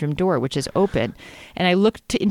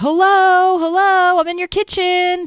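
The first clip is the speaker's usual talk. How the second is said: very high, loud, screamed call-out; 14 semitones higher, 6 dB louder than usual. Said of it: "I kind of screamed out".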